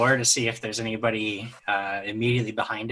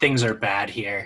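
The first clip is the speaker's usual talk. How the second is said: speaking in a whisper. A character whispers to another character; whispering. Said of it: "I'll whisper to Chip and I say".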